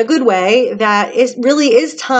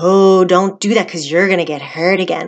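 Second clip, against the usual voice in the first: little devil voice, much lower; 4 semitones lower than usual. Describing self-defeating thoughts, the speaker voices the inner devil: little devil voice. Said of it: "that little devil voice inside".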